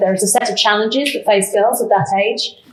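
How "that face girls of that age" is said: normal talking voice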